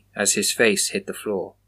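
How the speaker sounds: ordinary delivery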